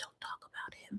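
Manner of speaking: soft unvoiced whisper.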